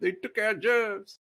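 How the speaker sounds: very high-pitched cartoonish voice. Joking about accents getting lazier, quoting South Park: South Park "they took our jobs" voice. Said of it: "South Park".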